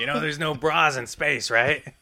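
put-on gravelly old woman voice. Joking about Carrie Fisher in the later movies: gravelly Carrie Fisher voice. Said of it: "her voice is gravelly by these movies".

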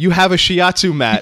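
high, loud yelling. Retelling the line that Nate yells out: imitating Nate yelling. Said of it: "the line Nate yells out is".

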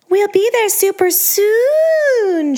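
sickly-sweet, slow, sugary coo pitched way up. A woman at the wheel speaks to her sullen audience of one, cooing. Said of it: "she cooed".

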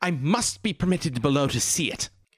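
upset, demanding shout. Voicing an upset character shouting at guards to be let below: character shouting angrily. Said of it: "when she starts shouting".

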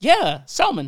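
very loud, high-pitched, full-volume yell. Insisting the video says salmon over another speaker: yelling. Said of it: "stop yelling".

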